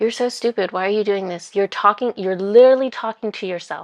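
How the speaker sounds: put-on mocking voice. Retelling the thoughts while doing the activity: imitating a mocking inner voice. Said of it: "My ego in my head was mocking myself".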